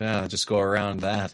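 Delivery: put-on muttering under the breath. Imagining the pizza guy watching the police from afar, retell him mock-muttering to himself. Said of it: "muttered to himself".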